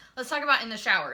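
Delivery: rushed, rattled-off, very fast chatter.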